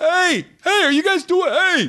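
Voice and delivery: put-on very high New York accent. Imagining people in Manhattan traffic hailing two people walking together, stereotypical New York accent. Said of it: "the most stereotypically New York or New Jersey sounding person".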